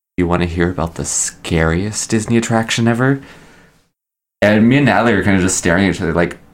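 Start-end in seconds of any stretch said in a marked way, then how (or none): 0.2-3.2 voice dropped right down to a low hush. Retelling how a janitor cornered them with a lowered voice. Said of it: "she lowers her voice, and she goes".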